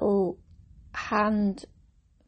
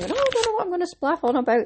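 high, fast, panicky fretting. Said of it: "I was sitting panicking, going".

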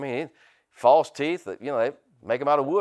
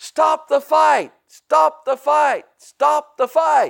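very loud, shrill, rough, high, drawn-out bellow; 14 semitones higher, 9 dB louder than usual. Retelling a boxing broadcast where announcer George Foreman stood up; imitating George Foreman hollering. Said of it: "you can hear him in the background hollering".

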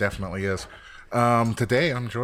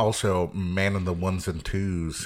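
ordinary delivery

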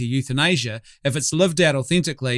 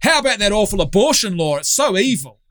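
mock yelling, put-on shout; 6 semitones higher than usual. Mocking how some people retell their story of a party of strangers, retelling a yell. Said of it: "I yelled out".

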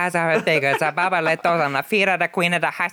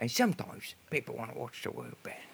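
put-on London actor voice, lower and quieter; 6 semitones lower, 15 dB quieter than usual. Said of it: "That's pretty good".

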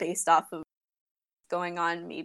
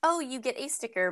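usual speaking voice

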